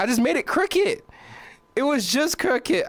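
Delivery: squeaky, very high cracking voice break. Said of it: "the voice crack".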